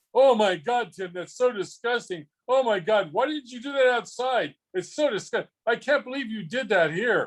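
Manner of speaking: overplayed put-on disgust, loud fake shocked outburst. Retelling a moment at a restaurant, voicing Dave's loud fake-shocked voice. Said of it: "he says in this loud, fake shocked voice".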